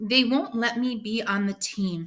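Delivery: ordinary delivery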